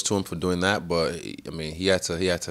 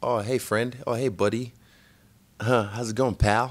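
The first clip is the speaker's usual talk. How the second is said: play-acted overly cordial, chummy voice, pitched up; 5 semitones higher than usual. Retelling how a rival greets him in person: imitating an overly cordial greeting. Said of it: "he's been pretty cordial".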